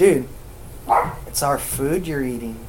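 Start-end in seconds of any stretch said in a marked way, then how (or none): none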